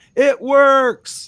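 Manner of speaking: high, loud delighted yell.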